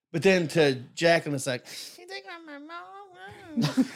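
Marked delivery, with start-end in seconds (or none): 2.0-3.9 very high, very slow, drawn-out, stretched delivery. Retelling what someone said, in a Jacqueline impression. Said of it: "that's my Jacqueline impression".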